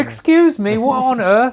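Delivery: put-on peak-anger Australian accent, very high-pitched. Retelling how an Australian woman talks at peak anger, in a mock-angry Australian accent. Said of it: "I can't really do an Australian accent".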